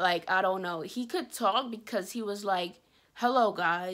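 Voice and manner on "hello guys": put-on calm tone, sounding unhappy. Retelling how he greeted them, frightening everyone, imitating a calm voice. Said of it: "It was like a calm voice".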